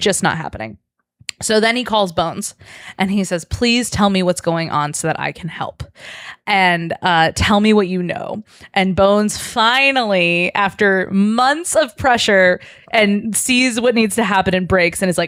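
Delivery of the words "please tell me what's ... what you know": normal talking voice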